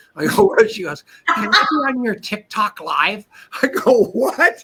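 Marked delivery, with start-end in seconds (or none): 1.3-3.2 small, nasal-toned voice. Retelling what a woman at a meeting asked him, in a little nasally voice. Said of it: "she's got this little nasally voice".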